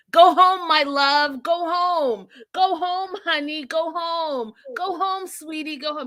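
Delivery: put-on high-pitched pleading screaming and yelling. Retelling what was screamed at the TV about a couple: screaming at the TV. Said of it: "I was screaming at my T V saying".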